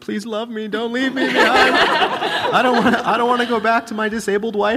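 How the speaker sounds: pleading, desperate mock begging, high, loud, laughing.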